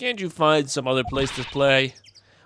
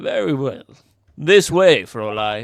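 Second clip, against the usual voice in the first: put-on British accent; 4 dB louder than usual. Voicing a character who leads a young woman to a crime scene, in a british accent. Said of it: "I'm still gonna keep the British accent".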